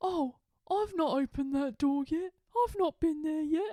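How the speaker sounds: high, jealous, hard-done-by complaining. Describing Reese's reaction, the speaker acts out what he said, imitating Reese. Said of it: "he was like".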